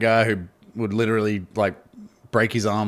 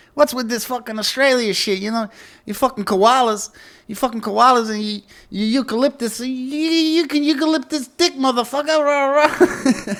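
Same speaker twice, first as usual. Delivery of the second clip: put-on heavy New York accent, very high, drawn-out you; 4 dB louder than usual. Retelling a performer's stage bit, quoting him in a thick new york accent. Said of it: "talking to this like thick New York accent".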